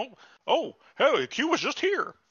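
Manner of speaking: put-on very high, slow, doddering, befuddled old man voice. Retelling a scene where a character turns around: imitating a senile old man. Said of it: "he turns around like an old man having a senile fucking moment".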